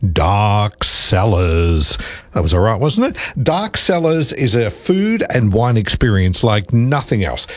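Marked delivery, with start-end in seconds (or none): 0.0-2.0 eerie, spooky haunted-house voice. Ad reader announcing a Halloween wine event's name, in a spooky voice. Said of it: "get into spooky voice".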